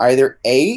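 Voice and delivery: ordinary delivery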